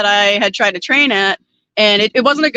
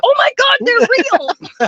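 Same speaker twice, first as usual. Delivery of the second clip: shocked, startled, blurted scream, very high-pitched; 13 semitones higher than usual. Telling of seeing a horse and buggy go by, retelling a scream. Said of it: "but I screamed".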